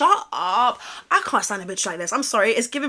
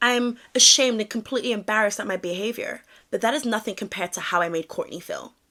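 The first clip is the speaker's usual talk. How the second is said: ordinary talk, nothing marked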